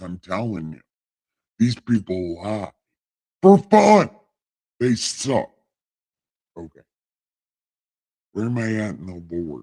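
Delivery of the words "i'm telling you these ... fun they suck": divine deity voice, as if from on high. The speaker announces they are God and speaks in God voice. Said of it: "right now in God voice".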